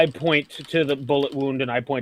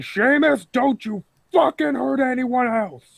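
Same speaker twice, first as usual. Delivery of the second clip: very high, put-on shout; 11 semitones higher than usual. Shouting at a party member in character during a fight: in-character shout. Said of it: "I'm shouting".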